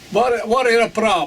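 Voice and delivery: put-on East European accent. Telling a story, quoting the man who turned up ten minutes later, East European accent. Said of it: "In an Eastern, uh, East European accent".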